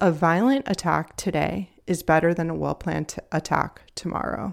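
ordinary talk, nothing marked

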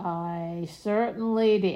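words groaned out loudly. Answering whether the crossword was done, in a groaning tone. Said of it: "I'm groaning".

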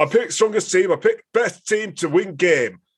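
put-on very high Yorkshire accent in advert-style voice. Imitating the coach giving a boring answer: Steve Borthwick impression. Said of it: "made him sound like he's selling Yorkshire tea".

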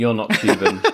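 mock completely flat deadpan delivery. Retelling the dancers turning around after a huddle, imitating their completely deadpan remark. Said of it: "Completely deadpan".

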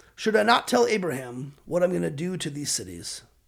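normal talking voice

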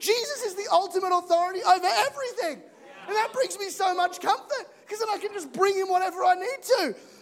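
very high, cracking, breaking voice. A preacher preaching to the congregation, voice breaking. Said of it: "my voice is breaking".

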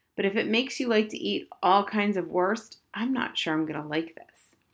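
ordinary delivery

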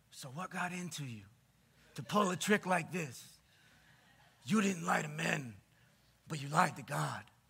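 low, tough-guy mobster voice. Reading aloud a rebuke to Ananias for lying, in a mob voice. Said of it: "here he goes with his mob voice".

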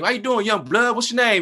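put-on very high, rapid, rattled-off teasing and joking. Retelling how a stranger greeted him and asked his name, playfully teasing, imitating a joking tone. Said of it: "He's like joking with me".

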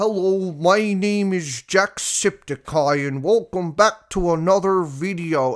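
very slow, careful, painstakingly drawn-out deliberate delivery. Imitate how he opened his old videos while trying to reduce his accent, speaking really slowly. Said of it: "speak really slowly".

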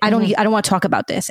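mock attitude-filled delivery. Retelling what she would say when frustrated: imitating someone saying it with attitude. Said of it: "she would say something with an attitude".

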